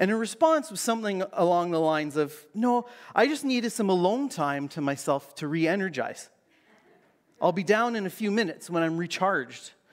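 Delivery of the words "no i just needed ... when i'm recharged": normal talking voice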